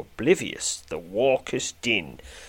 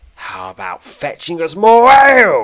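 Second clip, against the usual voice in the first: very loud, rowdy shout, rising in pitch; 8 semitones higher, 15 dB louder than usual. Reading a story, one of the men at a table calls to the reader; shouting. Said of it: "shouts one of the men".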